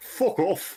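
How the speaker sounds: English accent, pitched very high. Answering the other speaker's challenge to try the phrase: English accent. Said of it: "but in an English accent".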